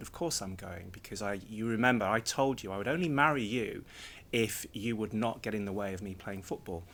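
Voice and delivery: ordinary talk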